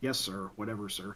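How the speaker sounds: very low, very quiet, subdued henchman voice. Describing a show's goons answering their commander, imitating low-key goon voice. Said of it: "all the goons have this really low key voice and are like".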